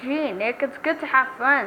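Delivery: ordinary delivery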